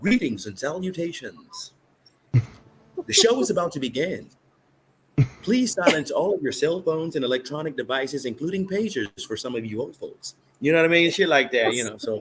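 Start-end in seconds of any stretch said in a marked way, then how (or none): 0.0-10.3 live-show emcee-style announcer voiceover. Rehearsing to emcee a retirement ceremony for friends, he uses a voiceover announcer voice. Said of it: "you got voiceover".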